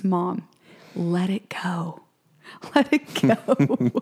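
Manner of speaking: very slow, drawn-out words spoken through laughter. Retelling how her daughter laughed and answered her, imitating Lucy laughing. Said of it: "Lucy just busts out laughing".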